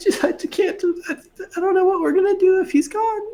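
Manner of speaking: tearful sobbing, pitched way up. Voicing a villager asked if her husband is dead: crying while talking. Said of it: "She just starts crying again".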